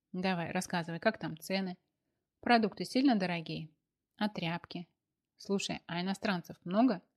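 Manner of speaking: ordinary delivery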